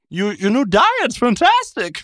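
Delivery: high, slow, drawn-out impression with Pennsylvania accent. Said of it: "Pennsylvania Christopher Walken".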